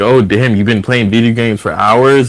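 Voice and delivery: mock upset, calling-out tone. Retelling what she said when she came home: imitating someone upset. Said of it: "a kind of a, a upset way".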